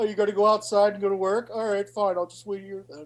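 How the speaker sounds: heavy guilt-tripping tone. Imitating how a ghost of Mike would haunt someone: imitating Mike guilt-tripping. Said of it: "It'd be more of a guilt trip".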